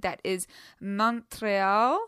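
very bad put-on French accent on Montreal. A music show host introduces the episode from a montreal hotel room, very terrible french accent. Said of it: "in my very terrible French accent".

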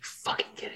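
muttering under her breath. Retelling what she said at the end of the first half, muttering under her breath. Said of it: "just mutters under her breath".

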